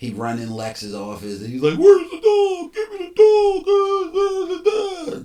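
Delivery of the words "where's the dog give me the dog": mock full-on tantrum, very high, very loud, shrill. Retelling a movie scene where Superman demands the dog: imitating a temper tantrum. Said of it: "throwing a temper tantrum".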